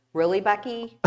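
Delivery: plain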